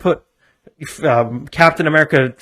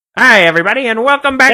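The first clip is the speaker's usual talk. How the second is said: 1920s radio announcer voice, much higher pitch; 9 semitones higher, 5 dB louder than usual. A podcast host opens the show in a 1920s radio host voice. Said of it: "talking like a nineteen twenties radio host".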